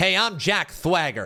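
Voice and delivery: put-on lisp. Acting out a guy with a lisp introducing himself by the name he was given, imitating Jack Swagger's lisp. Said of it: "a guy with a lisp".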